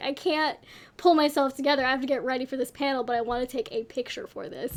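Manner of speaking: normal talking voice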